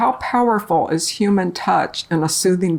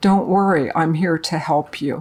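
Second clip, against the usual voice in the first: imitated, very comforting voice, much lower; 2 semitones lower than usual. Retelling how a volunteer held their arm and reassured them; imitating a very comforting voice. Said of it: "says in a very comforting voice".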